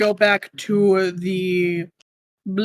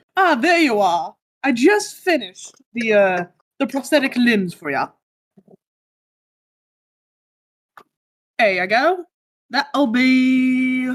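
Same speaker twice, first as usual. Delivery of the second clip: put-on Scottish-accented centaur voice, drawn-out be; 4 semitones higher than usual. Narrating a game for the players, voicing a centaur in a Scottish accent. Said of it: "He was like kind of like a Scottish accent".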